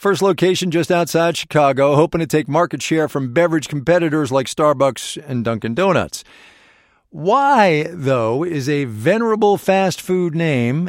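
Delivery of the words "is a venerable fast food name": slow food, strongly stressed. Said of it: "emphasis there on food".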